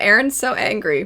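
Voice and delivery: ordinary talk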